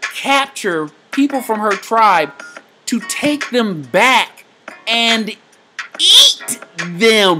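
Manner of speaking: voice shooting up in pitch, very high and rising. Retelling what she told about her tribe, voice going really high. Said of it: "my voice went really high".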